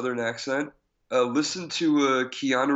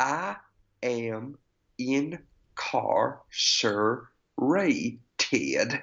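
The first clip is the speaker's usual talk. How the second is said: put-on Southern accent. Quote a film character's line to the brothers who want him for the mission, in a southern accent. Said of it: "let's not give you a Southern accent".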